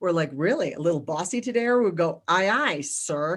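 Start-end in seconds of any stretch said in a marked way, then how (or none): 2.3-3.4 sarcastic, mock-obedient tone. Explaining how the family answers someone bossy: retelling a sarcastic 'aye, sir'. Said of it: "we mean it with all the sarcasm possible".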